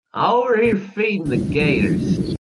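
offhand, high voice calling back. Narrator voices Royal answering Darius's call from the gator pit: Royal yelling back. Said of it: "Royal just yells back".

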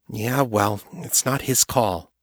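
ordinary delivery, nothing marked

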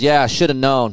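mocking, condescending tone. Retelling what an old man said on hearing they were from california, mimicking a condescending tone. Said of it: "it was a very condescending tone".

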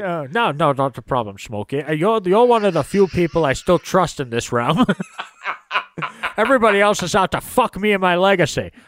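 put-on Scottish accent, actor-style voice. Replying to thanks, the speaker does a Sean Connery impression. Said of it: "I always wanted Sean Connery to say hello to me".

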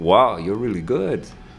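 bad, terrible put-on French accent. Retelling what the other demo guy said after the speaker won, terrible French accent. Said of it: "That's my terrible French accent".

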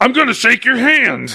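put-on sudden jump to shouting. Retelling how a quoted line jumps up loudly, imitating a sudden shout. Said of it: "like a big, like a jump up".

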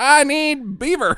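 put-on high, slow little kid voice.

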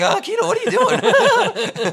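very high, loud, slow cracking yelp. Retelling a movie scene where he reacts to Kida: Michael J. Fox voice cracking. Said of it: "in the classic Michael J. Fox voice cracking".

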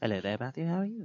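quiet, hushed, fake British accent. Speaker voices the trench-coat guy greeting a player, in a put-on british accent. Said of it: "My British accent".

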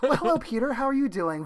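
relaxed, calm, casual easy tone. Imitating a character's line from a scene: MJ's relaxed sitting-there voice. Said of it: "She's just talking like she's sitting there".

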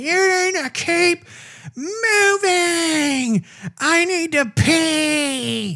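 play-acted, very high, bitter screaming. Retelling how an old woman on a scooter yelled at the crowd, imitating someone screaming. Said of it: "she was just screaming at all of us".

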